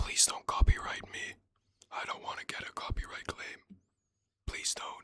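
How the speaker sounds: very quiet, breathy whispering. Tired of following the subtitles, the speaker whispers to viewers for fun: whispering. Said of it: "so I'm just whispering for fun".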